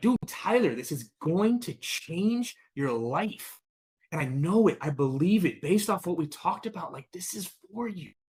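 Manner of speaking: enthusiastic, excited, swooping, all-in sales-pitch voice. Showing how to sound when asking Tyler to buy, excited. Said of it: "we don't even sound excited when we're asking them to buy. Like we don't even sound like".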